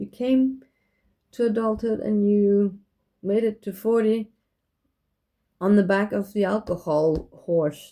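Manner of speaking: voice full of tears, on the edge of crying. Speaker talking to her twelve-year-old self, tearful. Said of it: "I'm getting really tearful now".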